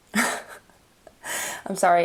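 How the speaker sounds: slow speech through laughter.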